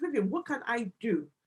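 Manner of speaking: plain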